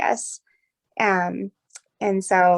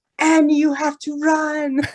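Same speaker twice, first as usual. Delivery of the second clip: put-on heavy Russian accent, very slow and drawn out; 8 semitones higher, 4 dB louder than usual. Retelling a night run, quoting a woman's voice in the dark, imitating Olga's thick Russian accent. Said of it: "she has this really thick Russian accent".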